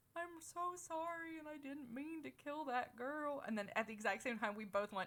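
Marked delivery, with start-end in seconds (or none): 0.1-3.4 pure goofy, silly, high-pitched put-on voice. Retelling what they said, the speaker quotes themself in a goofy put-on voice. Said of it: "I was doing the voice".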